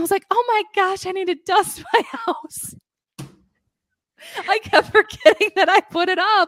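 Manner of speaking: very high voice, giggling through the words. Speaker telling a story they find funny, giggly. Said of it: "sorry, I'm really giggly today".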